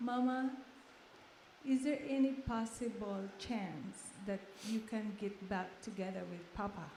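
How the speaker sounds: ordinary delivery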